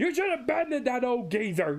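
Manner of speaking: put-on high-pitched yell. Retelling a scene where Garp yells in class: Garp yelling. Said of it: "You did have Garp yelling like".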